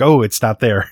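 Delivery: ordinary talk, nothing marked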